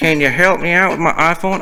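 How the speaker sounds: put-on deep Southern accent. Imitating a man from Tennessee, with a deep Southern accent. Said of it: "that had a real deep Southern accent".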